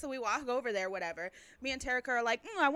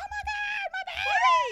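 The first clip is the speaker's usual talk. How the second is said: very high, stretched-out, drawn-out fangirl shriek; 6 dB louder than usual. Recalling screaming for Nikki while everybody screamed for others, retelling a fan scream. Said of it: "I had to channel my inner Cynthia and scream for Nikki".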